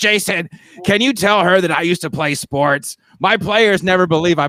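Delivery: put-on raspy voice. Retelling what Lindsay asked Jason, imitating Lindsay's raspy voice. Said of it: "She's got a very very raspy voice".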